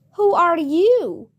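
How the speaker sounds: drowsy, languid, unhurried sleepy drawl. Reading the Caterpillar's question to Alice, languid, sleepy Caterpillar voice. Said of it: "addressed Alice in a languid, sleepy voice".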